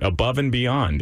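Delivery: ordinary delivery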